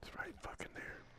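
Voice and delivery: very quiet, barely voiced whisper. Playing a video game with others, whispering. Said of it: "Why are you whispering?".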